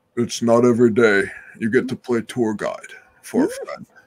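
swooping serial-killer villain voice. Showing a voice created for a film role: comic book obsessed serial killer voice. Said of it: "I got to create this for the character".

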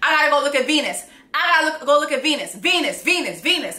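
put-on urgent, frantic, repeated raving cry. Speaker retells a man running barefoot around a palace: retelling someone screaming. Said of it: "screaming, screaming".

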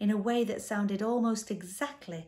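ordinary delivery

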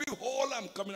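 high, mighty shout at full force. Retelling a pastor's third try at announcing himself, retelling a mighty shout. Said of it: "with all his might and voice".

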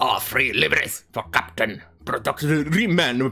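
failed fake Russian accent. Reading a company notice aloud, attempting a bad russian accent attempt. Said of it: "I probably do not know how to do Russian accent".

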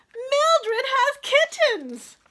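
shrill, very high-pitched, loud shout. A boy runs over to the basket where his missing cat lies; yelling. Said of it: "He started to yell again".

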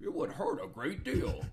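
whispered, breathy, slow, menacing put-on villain voice. Asked to do Bane, the speaker answers in a Bane voice. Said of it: "the Bane one is like, Bane".

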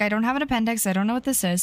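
ordinary talk

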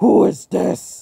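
high, harsh, rough, creaky, acted angry voice. Retelling a revived figure whose face turns red as it speaks; mock-angry voice. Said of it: "Almost like it's angry".

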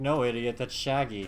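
ordinary talk, nothing marked

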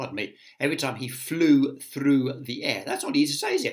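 ordinary delivery

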